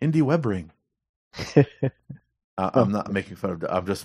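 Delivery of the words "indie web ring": mock, really enthusiastic delivery. Recalling how someone kept saying Indie web ring: mimicking Doug Beal's enthusiasm. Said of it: "I was trying to mimic the tone that he used when he said it. It was this really enthusiastic tone".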